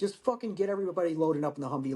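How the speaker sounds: ordinary talk, nothing marked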